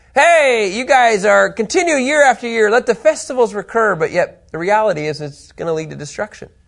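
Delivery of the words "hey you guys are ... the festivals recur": put-on sarcastic, mocking tone, higher. Retelling the prophet's words to the people: imitating sarcastic mockery. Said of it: "a little bit of sarcasm, a little bit of mockery".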